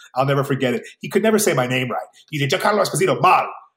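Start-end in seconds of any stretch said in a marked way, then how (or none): 2.5-3.5 quick, rattled-off delivery rushed through in one go. Speaker recalls how a childhood buddy said his name, imitating Paul saying it fast. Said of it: "He would say it really fast".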